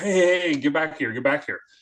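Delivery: mild yell at held-down volume. Retelling how Cal Ripken called him back down the hallway: imitating Cal Ripken yelling. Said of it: "and he yells".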